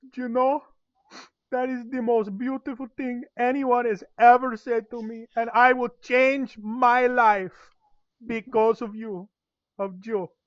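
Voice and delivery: weepy, very high, slow, drawn-out teary voice. Voicing a character who starts crying a little after being released: acted crying a little. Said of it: "he starts crying a little bit".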